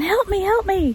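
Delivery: mock all-out, high-pitched woman's scream. Speaker recounts hearing a woman at the passenger side: retelling a woman screaming. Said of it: "I hear this lady screaming".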